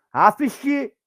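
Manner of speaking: loud, high-pitched frustrated yell.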